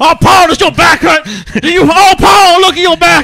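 very loud, very high, shrill, booming televangelist preaching. Speaker acts out a traveling televangelist healing a man, in a preaching televangelist voice. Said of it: "secret atheist televangelist".

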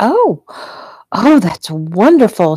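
slow, unhurried, drawn-out exclaiming. Deb reacts to hearing that the couple is engaged: exclaimed. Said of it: "she exclaimed".

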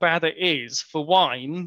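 ordinary delivery, nothing marked

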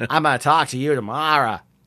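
put-on Boston accent. Reviewing a film, mocking Kevin Costner's forced Boston accent. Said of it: "doing like a completely forced Boston accent".

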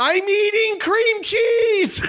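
put-on shrill, very high, drawn-out all-out scream. Retelling what he screamed out in a crowd before a flight, retelling a scream at full volume. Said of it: "as loud as I could, I screamed out".

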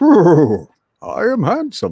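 high, loud, swooping put-on horse voice. Explaining a Stoic teaching, the speaker voices a prideful horse in a horse voice. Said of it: "that's my horse voice".

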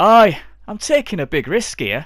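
booming, very loud, high put-on voice, belted out. Voicing Jack, who sells false papers: Jack character voice. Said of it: "I've got a thing for the voice for Jack now".

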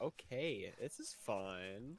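very slow, unimpressed, condescending drawl. Mocking another player's flat remark: imitating Braxton sounding unimpressed. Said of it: "He's like".

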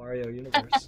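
normal talking voice

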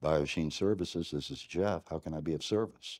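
very low, very soft FM radio DJ voice. Demonstrating the phone greeting at work, in a deep FM DJ voice. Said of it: "I kind of drop my voice down an octave. It sounds like I'm an FM DJ".

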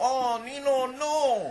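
put-on very high, loud Chinese accent. A performer voices his talking puppet for the audience, Fu Manchu puppet voice. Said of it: "That's Chinese".

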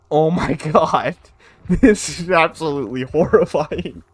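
loud, horrified voice, laughing through it. Watching a shrieker appear, the speaker reacts, laughing while horrified. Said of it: "I can't stop laughing though".

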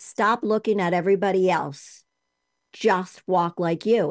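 put-on heavy, laid-on Boston accent. Quoting what the speaker's coach said, in a thick Boston accent. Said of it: "really heavy, thick Boston accent".

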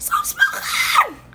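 high-pitched, slow shout.

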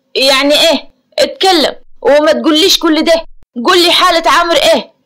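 sharp, harsh voice. A man presses the doctor about a patient's condition, sharply. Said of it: "رأفت بحدة".

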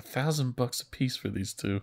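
mock muttering under breath. Retelling a character's remark to himself about paying two goons, imitating muttering under breath. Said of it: "under his breath".

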